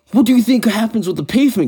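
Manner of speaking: very high, swooping, angry screaming. Retelling a woman screaming at someone while the speaker is on the court, imitating a woman screaming. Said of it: "I hear this woman screaming like".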